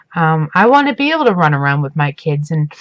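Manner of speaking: normal talking voice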